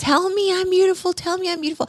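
very high, pleading scream. Speaker acting out the other speaker screaming at Nick, imitating someone screaming. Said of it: "so you're screaming at him, like".

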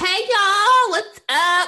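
very high, loud, cracking voice. Greeting listeners at the start of a podcast episode, voice cracking. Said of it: "my voice just sounded horribly cracked".

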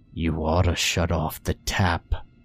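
soft, quiet, low growling voice. A narrator voices a skull-faced being speaking to the narrator, a quiet growl. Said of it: "the thing growled quietly".

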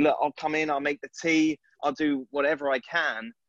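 normal talking voice

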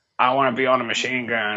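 put-on unflattering, disparaging eighty-year-old man caricature voice. Picturing himself at eighty still wanting combat: imitating an eighty-year-old. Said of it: "really disparaging impression of eighty, eighty year old".

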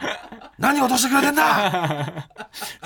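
mock very slow, high, drawn-out, furious tirade. Retelling the other speaker's reaction to failing a rental screening: imitating someone raging. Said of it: "そんな取り乱してはないですけど".

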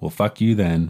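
put-on, mock-sarcastic tone. Telling a story, the speaker quotes a woman's retort to a man: retelling a sarcastic retort. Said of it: "she like sarcastically was like".

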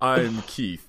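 polite, formal job-interview style voice. Imitating a wrestler who talks in a job interview voice. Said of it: "he talks in job interview voice".

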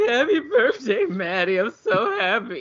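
acted-out sobbing, high tearful crying voice. Retelling a character bringing out a birthday cake: imitating Cassie crying. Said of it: "she's crying".

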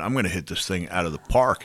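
normal talking voice

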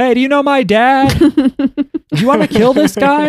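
very high, slow, drawn-out yelling call.

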